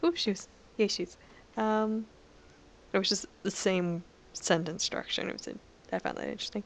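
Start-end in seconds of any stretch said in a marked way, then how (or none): none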